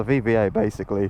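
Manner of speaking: voice cracking. Speaker partway through an explanation, hitting a bad voice crack. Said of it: "that was a bad voice crack".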